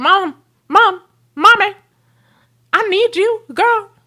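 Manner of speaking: very high, slow, drawn-out pleading dog voice. Petting her dog and voicing what the dog says: voicing her dog begging for attention. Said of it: "he's like".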